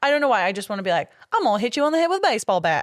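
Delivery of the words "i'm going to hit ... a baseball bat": hokey put-on hillbilly voice, pitched up. Describing her own hillbilly moment to another speaker; hillbilly voice. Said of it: "Hillbilly moment".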